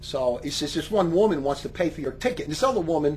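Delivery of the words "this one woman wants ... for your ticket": ordinary delivery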